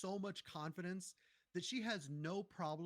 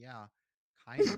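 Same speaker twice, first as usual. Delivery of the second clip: mock catty, grudging, very loud; 6 semitones lower, 13 dB louder than usual. Retelling a game character's reply to a thank-you request: imitating a catty reply. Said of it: "she says something kinda catty".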